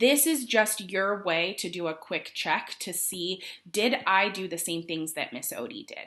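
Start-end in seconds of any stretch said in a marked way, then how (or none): none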